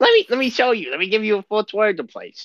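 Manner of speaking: squeaky, very high, friendly welcoming little kobold voice. Voicing a small kobold who befriends a player: friendly small kobold voice. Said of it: "But he's like".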